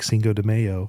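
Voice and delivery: slow mock female voice.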